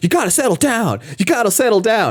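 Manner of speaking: very high, swooping, talking-down patronising yell. Retelling a film scene where a character rebuffs someone: imitating Hale yelling. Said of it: "holds his hand on his shoulders and yells at him".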